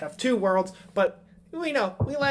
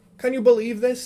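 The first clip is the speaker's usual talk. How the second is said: sudden slide into loud, high put-on Scottish accent; 5 semitones higher, 7 dB louder than usual. Voicing a dwarf grumbling to a friend: Scottish accent. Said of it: "it just went Scottish".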